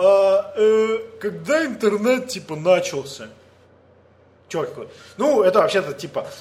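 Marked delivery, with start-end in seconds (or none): 0.0-3.3 put-on play-acted drunken voice, very slow drawl. Retelling a call to the police, putting on a drunk voice. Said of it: "и пьяным голосом".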